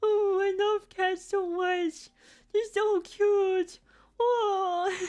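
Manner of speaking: mock crying voice, very high and very slow. Retelling how they cried over the cat: imitating own past crying. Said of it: "I cried, like, multiple times, being like".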